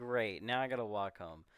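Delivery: normal talking voice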